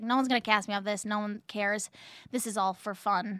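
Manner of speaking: ordinary delivery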